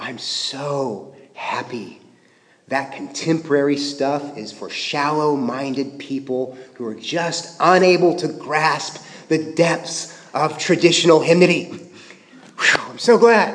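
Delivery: quiet murmured voice. After the church service, a friend in the next pew leans over, low voice. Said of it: "leans over and says to you in a low voice".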